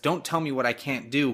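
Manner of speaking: ordinary talk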